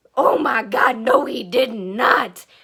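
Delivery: mock dismayed, loud, very slow, drawn-out outburst. Recalling a scene while driving, retelling an upset outburst. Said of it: "And I was very upset".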